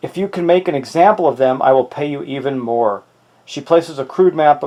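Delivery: plain reading voice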